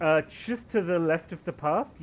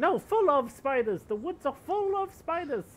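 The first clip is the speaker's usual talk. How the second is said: put-on very high elderly country woman voice; 10 semitones higher than usual. Voicing the old woman met outside with the cows, in an old woman voice. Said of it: "You see old woman outside with the cows".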